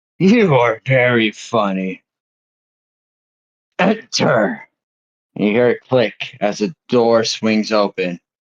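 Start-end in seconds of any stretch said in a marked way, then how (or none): 0.2-4.7 slow, unhurried, rumbling voice. Storyteller voicing someone behind a door after a knock, in a rumbling voice. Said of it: "you hear a rumbling voice from inside".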